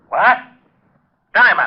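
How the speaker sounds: sudden, loud, high-pitched bellowed yell. Learning a body was found, yelling for Diamond: yelling. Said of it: "You better watch that yelling".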